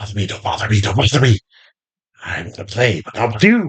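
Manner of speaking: put-on child-like whisper. Describing the whispers the listeners hear from what sounds like a child. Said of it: "whispers of what sounds like a child".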